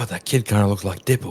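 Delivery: hushed, half-whispered stage whisper. Voicing a guard remarking on a kid's looks: half-whispering guard. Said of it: "you just hear one of the guards whisper".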